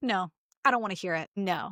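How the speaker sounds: ordinary delivery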